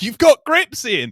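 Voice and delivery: high, loud shouted delivery. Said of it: "Jamal shouting".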